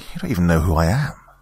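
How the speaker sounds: ordinary delivery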